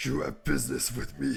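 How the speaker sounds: scary, unsettling, creaky rasp. Retelling how the character answers when approached for advice, imitating Igor's scary voice. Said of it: "and he's like".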